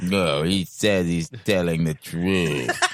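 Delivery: deep cartoon dog voice. Speaker shows the voice they wanted to put to a video, droopy dog voice. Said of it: "I wanted to have like a droopy dog voice".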